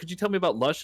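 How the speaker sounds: rushed, rattled-off, words tumbling out quickly. A man comes up and asks the speaker a question; imitating fast talking. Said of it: "he was b talking real fast".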